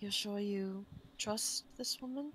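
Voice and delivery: quiet, half-whispered voice. Playing a character speaking to a companion under guise of scratching her nose: half-whispering. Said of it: "kind of whisper to Zaitari".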